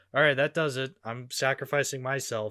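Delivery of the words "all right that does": ordinary delivery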